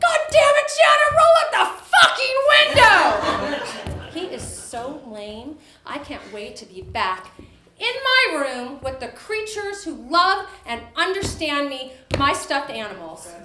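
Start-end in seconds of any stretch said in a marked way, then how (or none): 0.0-4.2 acted-out screaming. Retelling being in the smoky family car, imitating her dad screaming. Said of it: "My dad screams".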